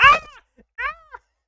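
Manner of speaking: very high-pitched yelling outburst. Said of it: "I'm sorry I'm yelling into this".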